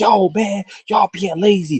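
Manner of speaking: acted high, drawn-out hollering yell. Retelling what the bosses said at work: imitating the bosses yelling. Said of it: "I hear the bosses yelling like".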